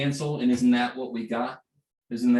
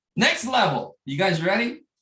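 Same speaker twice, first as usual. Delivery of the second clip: high, excited shout; 7 semitones higher than usual. Speaker asks the audience if they're ready for the next level, shouting. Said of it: "Sorry, I'm shouting at you".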